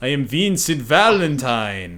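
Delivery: vampire voice, Transylvanian accent. A vampire introducing himself, Vincent Valentine with Transylvanian accent. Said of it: "he talks in a Transylvanian accent. ... like that".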